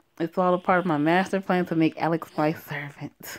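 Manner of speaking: ordinary talk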